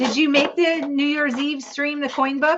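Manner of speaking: loud shouted yell. Speaking to a supporter, asking about a past stream, yelling. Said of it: "I don't know why I'm yelling".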